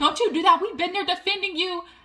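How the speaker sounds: heated, angry scolding tone. Retelling an argument, acting out one woman getting mad at another: mock-angry outburst. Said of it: "Margaret got mad at Jackie talking about".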